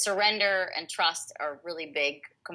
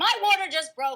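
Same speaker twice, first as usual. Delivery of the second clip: mock, very high, loud, defensive, insistent delivery; 12 semitones higher, 5 dB louder than usual. Retelling a reply to the valet who said she's not in labor: imitating own defensive reply. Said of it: "I was really defensive".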